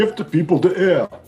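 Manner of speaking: put-on loud Austrian accent. Asked to say a line as Arnold, someone attempts an Arnold Schwarzenegger impression. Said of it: "Anyone do a good Arnold Schwarzenegger impression? Can you say "I love selfies" as Arnold?".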